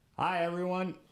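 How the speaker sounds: high-pitched yell. Greeting the camera at the start of a recording: yelling. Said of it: "I'm yelling".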